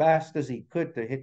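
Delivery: ordinary delivery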